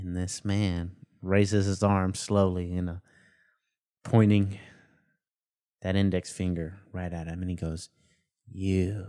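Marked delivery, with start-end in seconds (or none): 8.5-9.0 word stretched out long and breathy on a breath. Retelling what a stranger said while pointing at someone: imitating a long, breathy voice. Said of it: "long and breathy like that".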